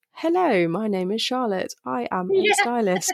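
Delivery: put-on robotic, machine-like reading tone. Recalling writing emails about herself as a stylist, imitating a robotic tone. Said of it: "I felt very robotic".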